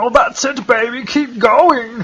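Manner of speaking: high-pitched German accent. Doing a bit for another speaker, as a German Austin Powers impression. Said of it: "Is this supposed to be Austin Powers?".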